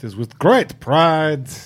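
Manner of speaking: put-on French accent. Joking about cosplaying as Lumiere, in Lumiere's French accent. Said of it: "your accent work is usually better than it should be".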